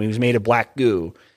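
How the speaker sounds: normal talking voice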